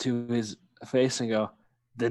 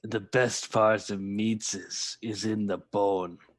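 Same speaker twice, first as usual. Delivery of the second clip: large troll character voice; 3 semitones lower than usual. The game narrator voices a large troll that has just landed before the group, in a troll voice. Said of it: "and a troll, / When a large clawed hand Oh. grabs onto the side and yanks, and a troll, larger, ignore that, It's a baby. larger than you guys So have little. seen, Oh. lands with a solid thud. / No m".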